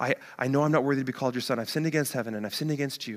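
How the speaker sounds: mumbling under breath. Acting out a broken son rehearsing what to say: muttering under his breath. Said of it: "he's just rehearsing this under his breath".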